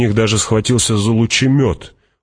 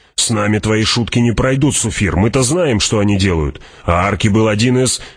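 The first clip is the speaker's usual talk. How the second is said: ordinary delivery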